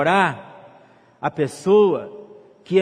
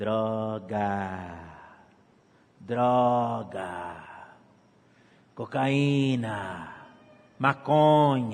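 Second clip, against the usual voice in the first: very deep, very slow devilish tempter voice; 7 semitones lower, 7 dB quieter than usual. A speaker warning the young about heeding the devil, devil's voice. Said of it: "Escuta a voz do diabo falando assim".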